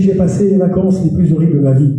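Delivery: normal talking voice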